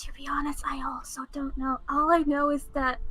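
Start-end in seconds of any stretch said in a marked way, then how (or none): 0.0-1.8 hushed, half-whispered stage aside. Retelling what he half-whispered to her, imitating the half-whisper. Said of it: "he also whispers to her".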